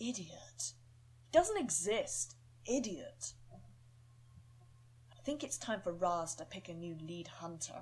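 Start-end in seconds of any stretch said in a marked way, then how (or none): 1.3-3.3 fun-loving, jokey, playful teasing with swooping pitch. Voicing a character dismissing the demon wolf: playful and fun-loving. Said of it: "Playful and fun-loving".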